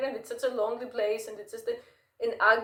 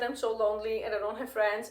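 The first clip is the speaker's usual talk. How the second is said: normal talking voice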